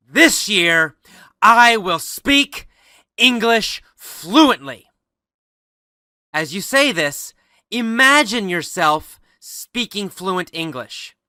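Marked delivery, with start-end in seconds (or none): 0.1-4.8 loud, strong, powerful and forceful delivery. Guiding listeners through an English-learning resolution, saying it in a loud powerful voice. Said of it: "with a loud, powerful voice, say again".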